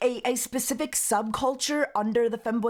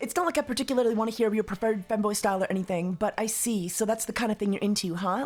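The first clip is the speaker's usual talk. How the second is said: ordinary talk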